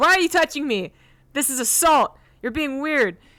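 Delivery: all-out high, loud yelling. Still running, she turns on the guard, Daisy yelling at the guard. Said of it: "now she's like yelling at the guard".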